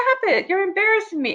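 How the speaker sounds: play-acted, very high-pitched, shrill yelling. Retelling how Amanda yelled at the speaker in the car: imitating Amanda yelling. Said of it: "Amanda starts yelling at me".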